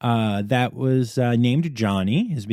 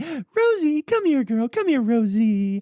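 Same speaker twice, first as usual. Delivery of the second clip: very high, coaxing, wheedling voice; 13 semitones higher than usual. Retelling getting down on one knee to call the dog Rosie, high coaxing voice. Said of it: "I put my voice high and I went".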